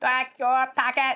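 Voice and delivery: put-on robotic voice. Echoing the step of dumping out the packet: put-on robotic voice. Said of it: "she says that with a robotic voice".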